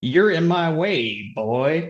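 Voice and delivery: high, put-on Southern farmer accent. Voicing a farmer in a group role-play scene, speaking in a Southern accent. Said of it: "Sen went southern there".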